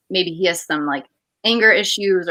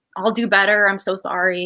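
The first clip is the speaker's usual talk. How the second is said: mock-tearful, put-on crying and pleading tone. Speaker acts out her past self pleading with him not to break up, retelling tearful pleading. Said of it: "I'm crying and pleading with him".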